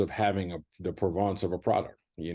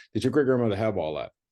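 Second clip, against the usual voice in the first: snide, sarcastic, jabbing delivery; 3 semitones higher than usual. Retelling what customers ask the speaker, imitating a sarcastic question. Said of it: "they kind of sarcastically say".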